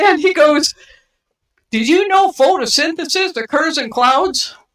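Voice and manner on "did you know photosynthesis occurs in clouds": weird, rowdy western-style voice. Speaker retells a man's question to her, in a weird westerny rowdy voice. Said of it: "he talked like that in this weird, like, westerny, rowdy voice".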